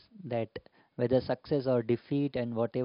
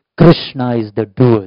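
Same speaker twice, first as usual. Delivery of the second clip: thundering, very loud, booming pronouncing tone; 18 dB louder than usual. Prabhupada suddenly interrupts someone reading reports: Prabhupada's thundering voice. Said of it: "very with a thundering voice".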